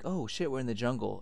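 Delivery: ordinary talk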